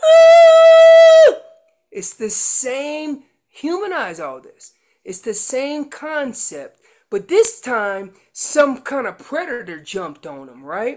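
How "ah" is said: high, loud, bloody murder scream. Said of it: "screaming bloody murdy like".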